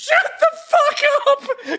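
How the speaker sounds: acted very high, drawn-out screaming shriek. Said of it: "I'm just screaming".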